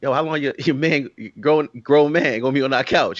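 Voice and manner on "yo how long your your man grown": plain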